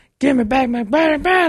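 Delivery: drill-sergeant scream, fast and high, right up close. Retelling confronting a woman waiting for the bus, acting out screaming in her face. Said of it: "like in her face, like screaming".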